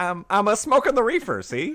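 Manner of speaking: put-on shrill, brash, loud thirties old-time wisecracking comedian voice. Trading impressions of the teddy bear Ted, doing a Ted impression, 1930s comedian style. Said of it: "sound like comedians from the nineteen thirties".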